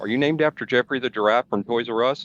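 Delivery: ordinary talk, nothing marked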